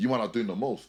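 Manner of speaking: normal talking voice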